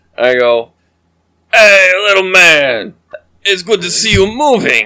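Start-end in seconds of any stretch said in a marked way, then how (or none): 1.5-4.9 put-on sloppy, slurred, drunken, friendly tone. In a role-play, the drunk character goes up to the boasting man, drunk. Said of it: "I am drunk off my ass".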